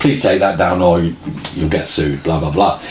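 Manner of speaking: plain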